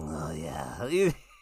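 very low, skin-crawling creepy voice. Retelling a character sneaking in through the window, creepy creeper voice. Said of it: "He's doing the ultimate, like, creeper voice".

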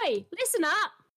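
very high-pitched, fake put-on British accent. Retelling calling to students who aren't listening: put-on british accent. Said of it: "I do".

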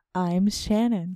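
public-radio announcer voice. Co-hosts recording a mock NPR intro, introducing themselves in NPR radio host voice. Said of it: "let's record an NPR intro".

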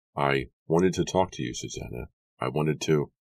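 ordinary delivery, nothing marked

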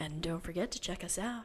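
put-on sultry, sexy, seductive voice. Signing off with 'check us out' in a sultry Jackie voice. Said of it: "I was doing my sexy Jackie voice".

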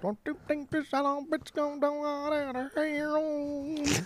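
very high, slow, laid-on-thick country twang. Saying the line again, this time with the country twang. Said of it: "say it with the twang, the country twang".

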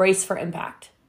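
ordinary talk, nothing marked

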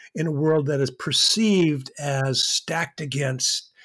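perceived stressed and said slowly.

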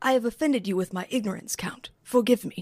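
put-on stiff movie-actor voice. Giving an attempt at an impression when asked: Keanu Reeves impression in Dracula. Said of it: "my Keanu Reeves impression in Dracula".

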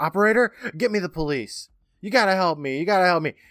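high, loud screaming. Retelling a movie scene where a woman phones the police: imitating a scream.

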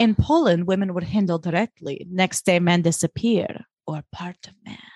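put-on, shaky, not very convincing Polish accent. Retelling a scene, the speaker quotes Dorota in a not-the-best Polish accent. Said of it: "Not the best Polish accent".

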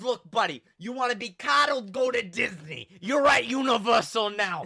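put-on loud, full-on New York accent. Retelling what a man at Universal told him, in a New Yorker accent. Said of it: "he's like a New Yorker".

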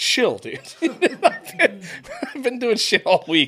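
high, laughing voice with a protesting tone.

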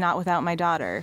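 ordinary delivery

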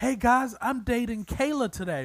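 put-on very high, thrilled, bragging little boy voice. Acting out a seven-year-old telling his friends: imitating an excited kid. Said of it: "and he's excited".

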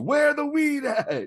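very high, very slow, drawn-out top-of-lungs holler. Retelling a line shouted in the background of a Zoom call: imitating a loud shout. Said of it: "just shouted at the top of his lungs".

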